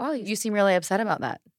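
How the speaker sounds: ordinary talk, nothing marked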